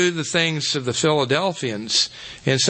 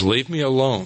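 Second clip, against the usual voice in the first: mock-grumpy, grumbling voice; 2 semitones lower than usual. Retelling how a man in costume answered kids wanting an autograph; mock-grumpy voice. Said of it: "this grumpy voice".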